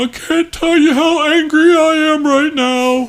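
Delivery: high-pitched, drawn-out, slow, menacing brute voice. A character just called a big weird guy answers back: big weird guy voice. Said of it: "We heard you were some big weird guy. / Yeah, I'm fucking [name]".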